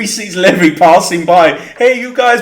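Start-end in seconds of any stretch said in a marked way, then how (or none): 1.6-2.4 pitched-up mock Italian accent. Imagining a figure in the basement calling out: Italian accent. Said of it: "but in an Italian accent".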